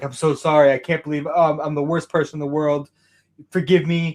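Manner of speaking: mock pleading, begging tone. Retelling a comic scene where a villain kneels: imitating someone begging. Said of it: "on his knees, like, begging".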